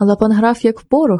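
usual speaking voice

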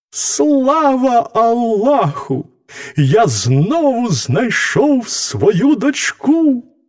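overjoyed, very high, drawn-out joyful exclamation. A padishah jumps up from the table on finding his youngest daughter again, with a joyful exclamation. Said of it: "радісно вигукнув".

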